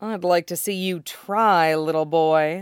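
mocking, menacing. A woman answers a young man's threat during a quarrel, a taunting threat. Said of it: "taunting threat in a quarrel".

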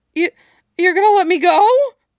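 very high, loud, terrified stammering. A man threatened by a gunman answers him, in a terrified stutter. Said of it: "he stuttered, eyes wide and terrified".

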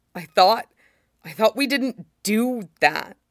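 painfully. Replying to someone who left them alone and now pleads, pained. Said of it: "Sid says painfully".

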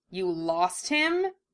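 needling, sarcastic, mocking and taunting tone. One companion throws the other's earlier question back at him, mocking. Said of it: "Russell asked mockingly".

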